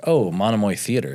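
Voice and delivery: ordinary talk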